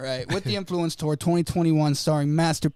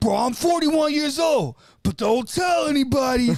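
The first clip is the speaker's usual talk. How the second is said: high, hollering, put-on shout; 9 semitones higher, 3 dB louder than usual. Retelling what a performer kept saying at a show: imitating a man yelling. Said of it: "he's yelling it".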